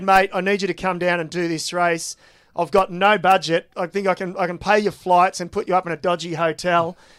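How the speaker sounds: ordinary delivery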